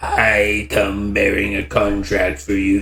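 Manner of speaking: slow, harsh, rasping voice that carries. Reading a board game's story text, voicing the Watcher: rasping Watcher voice. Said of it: "The Watcher's voice, when it finally speaks, rasps across the room".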